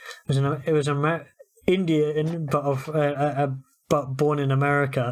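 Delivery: ordinary delivery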